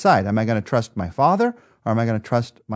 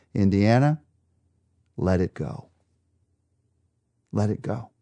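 tender, slow, gentle coaxing fatherly voice. Describing a favorite movie scene, quoting the father's gentle voice. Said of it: "his father says to him in this gentle voice".

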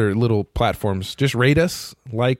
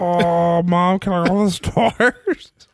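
put-on high-pitched voice of a small alien kid; 8 semitones higher than usual. Joking about a young Wookiee, doing a young Chewbacca voice. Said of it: "it's like 10-year-old Wookiee".

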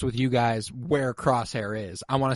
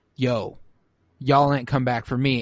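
ordinary delivery

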